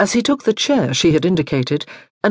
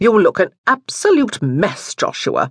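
blunt, frank, plain-spoken, unsoftened tone; 3 semitones higher than usual. A grandmother speaks to her grandson joshua, bluntly. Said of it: "his grandmother observed bluntly".

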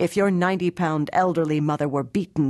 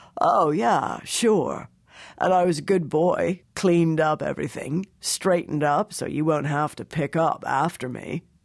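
smirking, sounding half stoned. Narrator reads the clerk's answer when his boss asks about pending work: half-stoned law clerk. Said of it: "looks half stoned. / shakes his shaved head, looks half stoned. / He sniffs, / her law clerk walks in without knocking. / looks half stoned".

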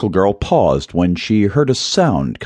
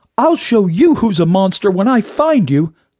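very high calling-out cry; 11 semitones higher than usual. A girl runs toward a teasing voice, calling out while running. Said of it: "Sparkle Girl called out as she ran".

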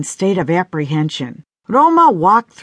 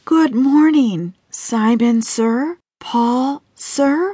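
whispered, higher and slower; 5 semitones higher than usual. Roma, seated facing two men, greets them, whispered. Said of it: "she whispered".

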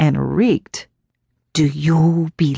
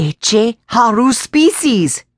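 growled words in pitched-up voice; 6 semitones higher than usual. Looking the boy in the eye, she speaks, growling. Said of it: "now growling and looking Tommy in the eye".

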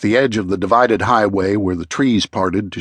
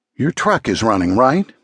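ordinary delivery

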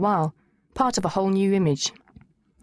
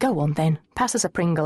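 ordinary delivery

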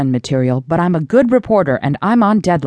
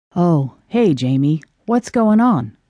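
tired-sounding, weary, worn-out voice. [name] greets Jamie, who has just opened the trailer door, in a weary voice. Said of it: "said [name] in his usual weary voice".

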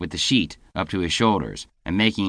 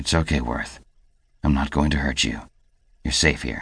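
low, gentle, reassuring, soothing stage whisper; 5 semitones lower than usual. Michael, holding a freezing boy, Worth, close to warm him; half-whispered. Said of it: "Michael whispered against his shoulder".

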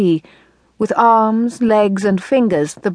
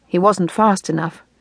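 ordinary delivery

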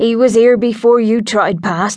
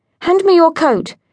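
sharp, higher-pitched delivery; 7 semitones higher than usual. Lucy gives Hedge an order, in a sharp tone. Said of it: "She rarely used a sharp tone of voice".

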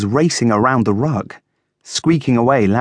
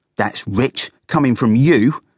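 cross and irritated, patience fraying. Fuzzy answers Coco, almost losing his temper. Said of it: "Fuzzy chattered, almost losing his temper".

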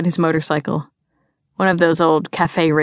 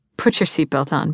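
ordinary delivery

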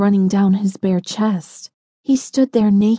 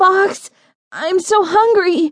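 very high, shrill, high-pitched shout; 10 semitones higher than usual. Reading a first-person story, the starving narrator calls out to Boggs: shouted. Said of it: "I shouted".

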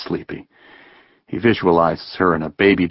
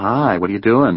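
usual speaking voice

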